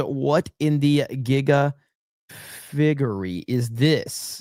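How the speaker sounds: slow, deliberate, drawn-out word-by-word delivery. Reading a viewer's chat message aloud on stream, said slowly. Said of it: "I had to say that one kind of slow".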